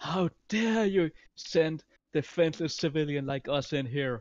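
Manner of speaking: loud, full-throated yell. Speaking in character to a crowd of monsters: shouting loudly. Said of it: "shout loudly".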